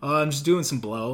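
mock relaxed, casual delivery. Retelling what a friend in the bathroom stall said: imitating a casual tone. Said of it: "all casual about it".

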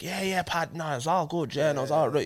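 put-on dialed-up Irish accent. Retelling how he talks to an Irish friend: stronger Irish accent. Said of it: "if I'm talking to Irish dude right now, I'm like".

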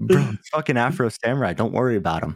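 normal talking voice

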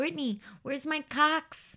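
mock small child's speech. Retelling what a small child in her care says: imitating a toddler mispronouncing "socks". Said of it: "she has a tough time saying the word socks".

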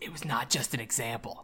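soft, storybook-style narrator voice-over. Recapping a story's plot, the speaker breaks in as the narrator: narrator voice. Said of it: "Narrator voice".

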